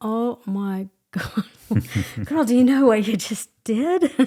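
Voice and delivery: acted crying, words coming out through tears. Speaker recounts what a woman told her and acts out her reaction, retelling her own crying. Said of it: "I'm crying like".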